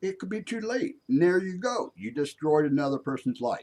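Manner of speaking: high, worked-up, agitated outburst.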